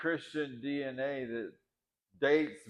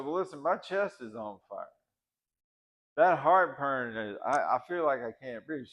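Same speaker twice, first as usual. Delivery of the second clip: plain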